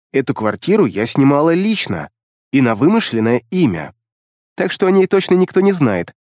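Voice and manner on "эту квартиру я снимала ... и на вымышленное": ordinary delivery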